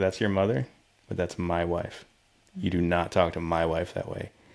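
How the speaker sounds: put-on grave, stern, no-nonsense, dead-serious voice. Retelling a video where a dad warns his son: imitating a serious dad. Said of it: "And he gets real serious".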